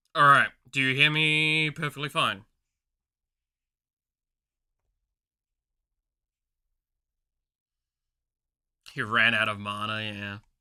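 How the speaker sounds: breathless, out of breath speech. Checking that the listeners can hear, the speaker is out of breath. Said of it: "very out of breath right now".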